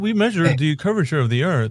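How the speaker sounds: haughty, snobby know-it-all scientist voice, lecturing. Speaker acts out a scientist while talking: mock-snobby scientist voice. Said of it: "I act like, you know, the snobby guy".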